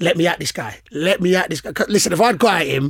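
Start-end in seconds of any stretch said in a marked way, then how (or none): none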